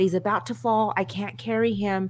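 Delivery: plain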